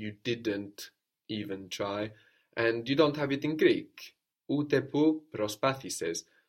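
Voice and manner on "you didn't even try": ordinary talk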